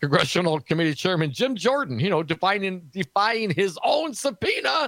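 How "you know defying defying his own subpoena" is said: high, slow, fake choked-up voice. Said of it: "I get a little choked up".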